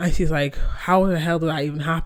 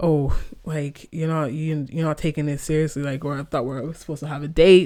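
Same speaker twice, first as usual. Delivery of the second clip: ordinary delivery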